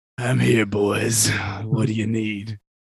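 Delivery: put-on deep, raspy, hoarse voice. Imitating the other speaker's greeting, imitating a deep raspy voice. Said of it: "Sound like Babe Ruth towards the end".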